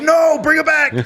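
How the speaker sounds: shrill, very high, loud, freaked-out scream. Retelling freaking out in Target over a job offer, retelling a scream. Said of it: "You're screaming at the top of your lungs".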